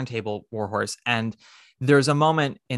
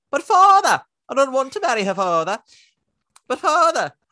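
very high, shrill, loud put-on Devonshire accent; 12 semitones higher, 6 dB louder than usual. Retelling a story, the speaker voices the young boy in a Monty Python-style voice. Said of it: "I need to do my Monty Python thing".

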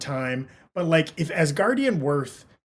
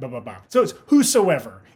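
plain

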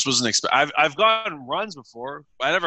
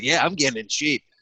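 plain

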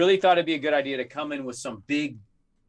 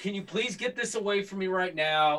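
mock tearful crying voice, much quieter; 5 semitones higher, 5 dB quieter than usual. Recounting being cornered by a snake while everyone laughed, retelling own crying plea. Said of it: "And I was crying".

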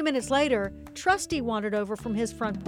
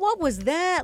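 gasping, higher, louder, slower; 6 semitones higher, 4 dB louder than usual. Lady jumps out from behind the doghouse after a blur rushes past, gasping. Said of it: "Lady gasped".

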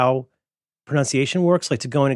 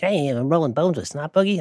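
put-on Baltimore cop accent, badly done; 2 semitones higher than usual. Quoting a line from the first episode: terrible McNulty impression. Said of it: "I do a terrible impression of him".

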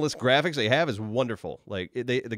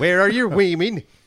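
Viking-style accent; 7 semitones higher, 7 dB louder than usual. Trying out Viking accents with others, Viking accent. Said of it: "Is there a Viking accent?".

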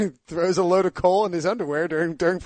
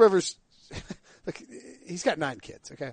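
plain

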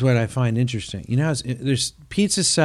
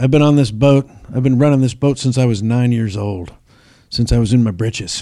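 proud, boastful bragging with a Southern, Florida-style sound; 4 dB louder than usual. Retelling an airboat guide's words: imitating Southern bragging. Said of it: "classic, like, Southern bragging".

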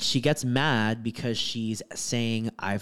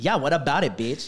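play-acted combative, aggressive, hostile tone; 4 semitones higher, 4 dB louder than usual. Retelling a coworker's reply in the chosen reading: imitating a hostile retort. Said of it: "I choose violence".

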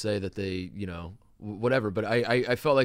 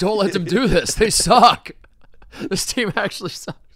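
mock scream, higher and louder; 11 semitones higher, 10 dB louder than usual. Retelling screaming at our guys during the game: imitating own screaming. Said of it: "screaming at our guys".

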